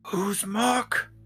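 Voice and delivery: whispered aside. A character leans over to Cherry and asks about Muck: whisper. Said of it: "leans over a little bit and whispers".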